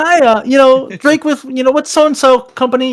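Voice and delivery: very high-pitched, bright voice. Speaker shows how he greets people when entering their homes, raised-pitch greeting. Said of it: "I'll increase the pitch of my voice".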